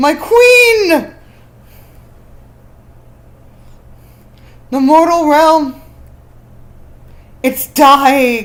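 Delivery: very loud, slow, goofy solemn voice. Pitching a story idea to the group, delivering a dramatic line: serious attempt that sounds goofy. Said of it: "I tried to make that sound serious, and I ended up making it sound goofy".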